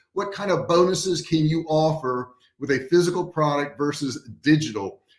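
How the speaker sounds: normal talking voice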